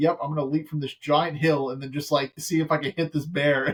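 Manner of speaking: usual speaking voice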